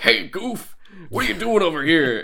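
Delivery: gruff cartoon villain voice with swooping, wide-ranging pitch. Speaker recalls a voice actor from the Goofy Movie, doing a gruff Pete voice. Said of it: "that gruffy Pete voice where he's like".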